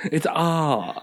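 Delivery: very posh British accent with dropped r sounds. Answering another speaker by showing a British R: posh British accent. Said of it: "a super poshy posh British guy".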